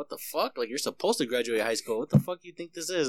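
mad, angry, heated outburst. Speaker retells the uncle's reply to asking for graduation money: imitating uncle getting mad. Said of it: "he got all mad at me".

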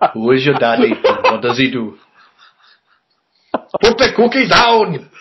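fake Indian accent with swooping sing-song pitch. Doing a quick impression for the others; impression sounding like Apu. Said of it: "That sounded like Apu for the Simpsons".

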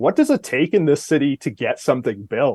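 usual speaking voice

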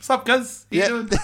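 put-on New Zealand accent with a twang. A guest imitating a dude who appeared in one scene, new zealand accent impression. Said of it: "That's a great impression".

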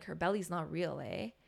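hushed, very quiet half-whisper. Retelling what a kid quietly said about a fake belly: imitating a half-whisper. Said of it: "we're, like, whispering".

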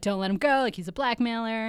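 normal talking voice

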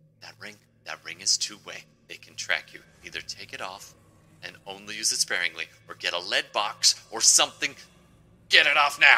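frantic, urgent whisper. Voicing a companion warning a fleeing player about the ring: frantic whisper. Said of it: "Kat is whispering frantically in your ear".

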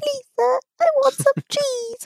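tiny, pleading, very high squeaky mouse voice. Retelling a favourite movie opening, imitating the little mice. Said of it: "the little mice that are in their little corner, and they're just like".

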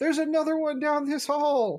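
very high, shouted voice. Playing a character in a game, warning that another creature is down the hall: yelling a warning. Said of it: "I'm going to yell".

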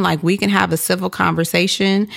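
plain

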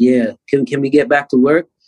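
ordinary delivery

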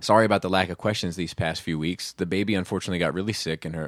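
ordinary talk, nothing marked

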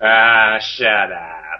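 put-on dismissive tone in a New York accent. Imitating a houseguest telling someone to shut up: Ashley impression. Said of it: "As Ashley would say".

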